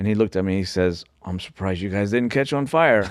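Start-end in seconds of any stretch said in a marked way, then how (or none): 1.2-3.1 imitated dead-serious deadpan delivery. Retelling what a mechanic said about the engine: imitating someone dead serious. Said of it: "dead serious".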